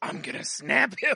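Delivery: put-on loud, high, breathy drunken whisper. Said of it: "He just goes breathy, so that means he's whispering".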